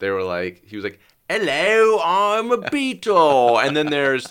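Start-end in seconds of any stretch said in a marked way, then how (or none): 1.3-3.6 bad, overdone British accent, very high, loud, slow, drawn out. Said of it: "Generic bad British accents".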